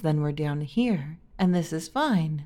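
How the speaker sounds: sunk into low, warm tones. Speaker demonstrates talking without vocal fry, in warmer tones. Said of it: "if I sink into like the warmer tones".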